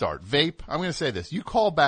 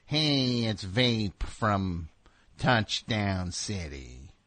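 very slow put-on drawl, every word dragged out; 5 semitones lower, 5 dB quieter than usual. Coaching someone on a phone intro: Jack Nicholson impression. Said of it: "Give me more of a Nicholson impression".

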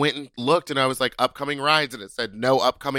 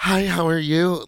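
forced, laid-on, put-on feminine voice; 4 semitones higher than usual. Retelling getting into a ride while passing as a woman: imitating own put-on woman's voice. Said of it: "I was really trying to put it on".

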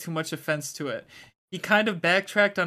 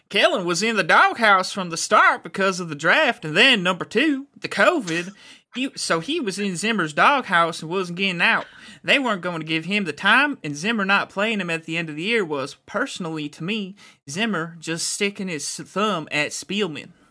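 slow, put-on Southern drawl; 2 semitones higher, 4 dB louder than usual. Reading a quote from a player's dad aloud in a Southern accent. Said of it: "should I do the Southern accent for him?".

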